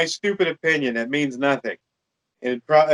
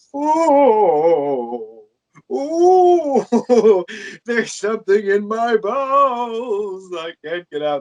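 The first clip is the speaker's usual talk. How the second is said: high, very slow straining groan, drawn-out ooh; 7 semitones higher than usual. Mocking how Santa talked in the movie: Santa Claus straining voice. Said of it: "Santa Claus talked like he had, you know, problems pooping".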